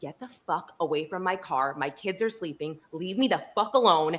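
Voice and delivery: acted-out freaking out. Retelling her reaction to a man at the gas pump: retelling flipping out. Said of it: "I like flipped out".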